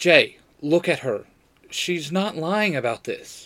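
plain reading voice

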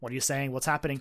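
normal talking voice

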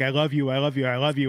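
normal talking voice

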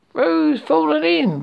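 high, storybook-style crying out. Narrator reading Rabbit as friends rush to the rescue, crying out. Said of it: "cried Rabbit".

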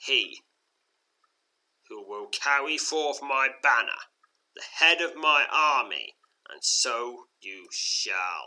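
slow, loud, drawn-out, sinister and menacing. Narrating an adventure, the Shadow Dragon speaks in your mind, sinister Shadow Dragon voice. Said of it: "echoes the sinister voice of the Shadow Dragon".

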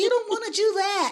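squeaky, very high-pitched voice. Showing how discouraging people's voices don't sound, high-pitched voice. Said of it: "It doesn't go high like".

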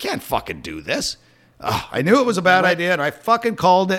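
worked-up, rising, swooping rant. Ranting about something being a bad idea, getting worked up. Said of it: "I'm getting worked up now".

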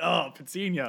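mock-creepy put-on tone. Teasing a friend about how they said a name, imitating a friend's creepy tone. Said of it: "You had like a tone there".

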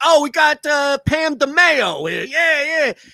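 very high, big, loud, drawn-out New York woman's voice. Retelling a sitcom scene, imitating a loud New York construction woman. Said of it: "stereotypical big New York City loud construction woman".

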